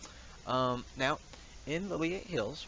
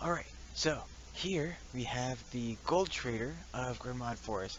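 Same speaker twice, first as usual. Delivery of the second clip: speaking in a whisper. Guiding the listener to the gold trader without alerting others, whispering. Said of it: "I'm sorry that I have to whisper a bit".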